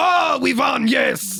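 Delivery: bad French accent, high, slow, very drawn out. Acting out the French arriving after the battle: bad French accent. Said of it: "That's not a French accent".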